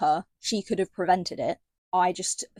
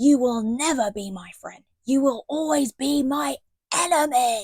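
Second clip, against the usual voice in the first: play-acted, pitched-up, pure venom; 6 semitones higher than usual. Retelling a book scene, acting out a character's line: imitating Selena's venomous voice. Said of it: "pure venom in her voice".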